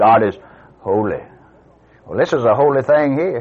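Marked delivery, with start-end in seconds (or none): 0.0-1.2 very low, powerful intoning, dropped an octave. Mocking how people talk about God, voice dropped an octave. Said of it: "Even drop their voice about an octave".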